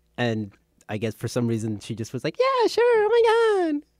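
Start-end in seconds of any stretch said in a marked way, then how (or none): 2.4-3.9 very high, slow, squeaky put-on girl voice. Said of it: "That was a spot-on impression".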